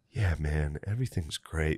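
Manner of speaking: real flat, level monotone drone, no tune. Recalling how Butterly would talk every once in a while, imitating Butterly's real monotone. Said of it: "Like this real monotone thing".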